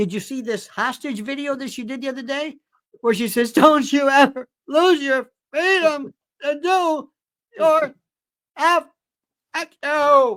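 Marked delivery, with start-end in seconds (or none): 3.5-10.4 mock very slow, broken, drunken slur, pitched up. Imitating the wife's video message: imitating a drunken late-night call. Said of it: "like those four o'clock in the morning calls to an old girlfriend".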